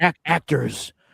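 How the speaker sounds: grand, dramatic stage-actor delivery with a stumble. Retelling what an actor said at a bar: imitating an actor's dramatic delivery. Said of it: "He was so dramatic".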